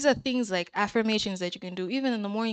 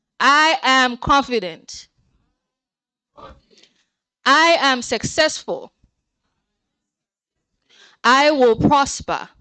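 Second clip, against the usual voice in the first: loud confident shouting, higher and louder; 5 semitones higher, 11 dB louder than usual. Leading a room in repeating affirmations, asking for a nice shout: loud confident shout.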